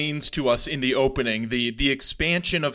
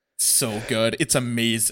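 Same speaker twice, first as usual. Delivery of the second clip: plain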